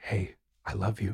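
put-on loving, tender whisper. Showing how they whisper good night to their children: imitating a loving whisper. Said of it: "when I whisper to my children".

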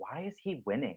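mock-earnest voice. Retelling what a woman asked on mic on election night, earnestly asking. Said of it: "she earnestly asks".

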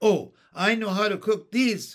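glad, eager exclamation. Looking in the supper bag at the potatoes, the speaker cries out happily. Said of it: "cried Jesse happily".

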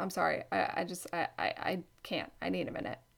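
imitated stutter. Retelling an encounter, the speaker quotes what a man said, imitating him stuttering. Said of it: "Like stuttering".

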